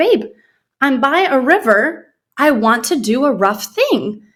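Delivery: put-on Turkish-accented English. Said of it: "in his Tinglish, as we call it, Turkish English".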